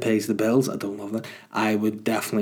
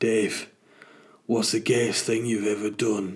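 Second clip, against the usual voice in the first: put-on northern English accent. Hosts acting out how a question from Richard should sound; imitating Richard, Northern English accent. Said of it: "asked in a Northern English accent".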